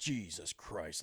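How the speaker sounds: fed-up, exasperated, pissed-off swearing. Retelling a father finding files on the computer: imitating an angry father. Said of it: "he's, like, pissed off".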